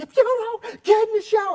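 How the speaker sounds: very high, loud, shrieking scream. Retelling his wife losing her temper at the kids: imitating her screaming. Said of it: "she's screaming".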